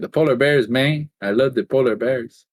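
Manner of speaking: put-on South American accent. Joking about polar bears, slipping into a South American accent. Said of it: "I became like South American".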